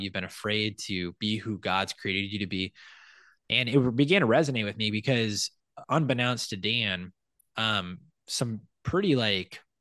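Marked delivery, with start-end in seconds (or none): none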